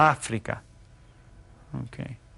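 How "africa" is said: Africa with stress on the first syllable. Naming the continent in spanish, stress on first a of africa. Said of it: "it has an accent over the first A. That means you stress that".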